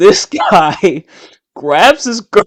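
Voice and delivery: talking through laughter. Telling a story about a guy at a dance, laughing while talking. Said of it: "I'm laughing already".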